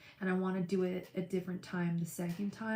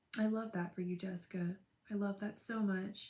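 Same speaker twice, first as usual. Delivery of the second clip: tearful, choked-up, emotional voice; 4 dB quieter than usual. Reacting to a friend's happy news: tearful and emotional. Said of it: "Getting all tearful".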